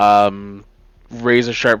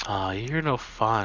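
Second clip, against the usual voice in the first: quiet, lilting, almost lyrical voice; 10 dB quieter than usual. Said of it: "an almost lyrical voice going".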